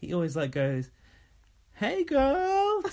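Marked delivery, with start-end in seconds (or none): 1.7-2.8 put-on very high, loud call with "girl" stretched out. Showing how a housemate greets another: imitating Dylan saying hey girl. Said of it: "goes, ... to her like that".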